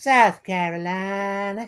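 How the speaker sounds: slow, drawling South Carolina accent.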